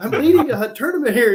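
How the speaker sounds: play-acted, very high, angry screaming rant. Retelling an angler's argument at a crowded brush pile: imitating someone screaming. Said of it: "he's screaming at him".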